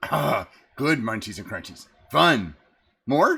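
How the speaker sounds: little fey creature voice. Voicing a little creature asking a player for treats: little fey creature voice. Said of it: "And he's like".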